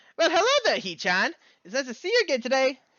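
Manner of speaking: way too upbeat and very high-pitched. Reading aloud a character's greeting to the narrator: overly upbeat Misha voice. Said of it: "way too upbeat a tone of voice".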